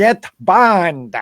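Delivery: high, loud yell. Describing the Blofeld villain who yells orders, imitating Donald Pleasence yelling as Blofeld. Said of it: "you hear him yelling, ... And he's like".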